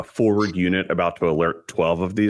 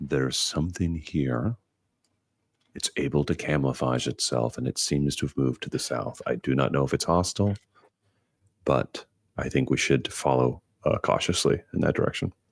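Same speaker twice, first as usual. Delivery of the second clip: very low, hushed murmur; 5 semitones lower, 5 dB quieter than usual. A player's character walks casually back to the group and speaks in a very low voice. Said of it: "in a very low voice say".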